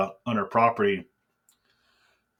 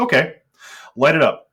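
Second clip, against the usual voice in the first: loud, high, dead-serious tone. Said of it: "he was dead serious about it".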